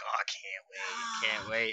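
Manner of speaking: distinctive speech pattern with swooping pitch. Imitating Ricky reacting to wrestler names: imitating Ricky's way of talking. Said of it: "Ricky talks like this".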